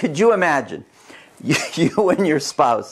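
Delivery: words breaking through suppressed giggles, stifled laugh. Asking buyers to imagine overbidding while trying not to laugh: laughing while talking. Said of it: "I'm trying not to laugh".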